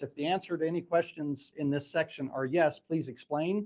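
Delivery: normal talking voice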